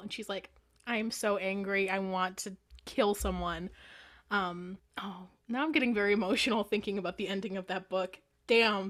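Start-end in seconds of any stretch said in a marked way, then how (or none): none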